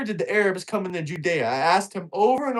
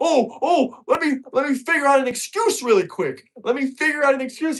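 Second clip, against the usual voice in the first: mock panic, high and scrambling; 6 semitones higher than usual. Retelling how the other debater reacted after being corrected: imitating someone panicking. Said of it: "He just started panicking".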